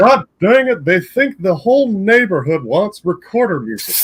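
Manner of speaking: loud, high cartoon voice. Asked to repeat a line about recorder music, Hank Hill voice. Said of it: "but in a Hank Hill voice".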